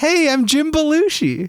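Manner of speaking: squeaky, very high, goofy put-on character voice. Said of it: "now we have to do a goofy one".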